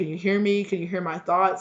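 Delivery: plain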